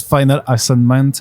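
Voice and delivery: put-on English accent. French speaker saying an English phrase mid-sentence, in an English accent. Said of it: "je prends l'accent anglais".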